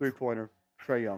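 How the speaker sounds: put-on flat delivery. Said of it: "I say you just go monotone when the Hawks".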